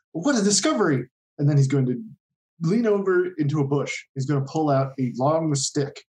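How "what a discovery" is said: high excited yelling. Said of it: "Koba is going to yell out".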